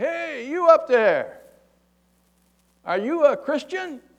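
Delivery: put-on very high, slow, drawn-out yell projected upward. Telling a joke, acting out a man calling up to someone: imitating someone yelling up. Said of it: "he yells up to this guy".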